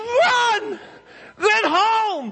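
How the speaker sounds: very high, loud, desperate yell.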